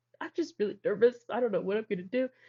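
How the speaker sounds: tearful voice near breaking, holding back tears. Retelling answering a trainer while trying not to cry: imitating own tearful voice. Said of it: "trying to keep it together".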